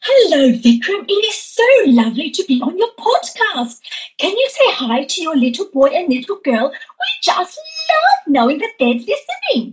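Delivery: very high, swooping, swinging character voice. Asked by the podcast host to perform her character Poppy: Poppy character voice. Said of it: "I know you play the character of Poppy".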